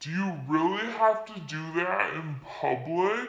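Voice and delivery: very low, angry, offended, aggressive growl. Retelling an offended man's public rebuke, imitating an aggressive growling yell. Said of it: "he is just like so aggressive, like there's even like a growl in his yell".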